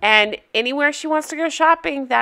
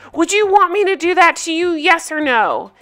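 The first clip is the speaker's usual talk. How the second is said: put-on berating, hectoring, screaming outburst; 6 semitones higher than usual. Retelling a man screaming at her in a store: imitating someone screaming. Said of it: "He is screaming at her".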